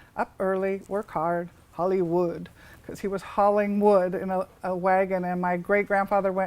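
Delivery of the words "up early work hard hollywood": put-on Chinese accent, polite tone. Retelling what a man arriving in a wagon said, put-on Chinese accent. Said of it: "in a nice Chinese accent".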